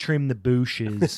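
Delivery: put-on Appalachian accent. Imitating grandparents' speech for friends: imitating grandparents' appalachian accent. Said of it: "in this Appalachian".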